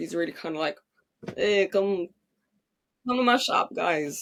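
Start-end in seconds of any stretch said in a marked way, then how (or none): 1.4-4.2 put-on welcoming old Italian New York shopkeeper voice. Describing a stage role once played, Mister Mushnik voice. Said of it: "the old Italian New York guy who kinda runs the flower shop".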